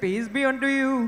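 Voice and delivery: slow, slight Indian accent. Showing the audience how to say the greeting: slight indian accent. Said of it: "add a little Indian accent and say".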